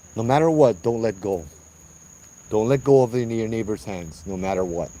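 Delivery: normal talking voice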